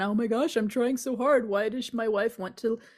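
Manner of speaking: mock pleading, guilt-tripping, sob-story tone. Imitating a master guilter telling everyone a sob story: imitating a guilt-tripping sob story. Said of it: "The sob story".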